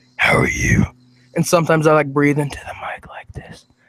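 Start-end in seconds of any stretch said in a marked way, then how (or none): 0.2-0.9 sinister, creepy put-on demon voice. Showing the others a voice viewers find creepy: creepy demon voice. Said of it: "this demon voice".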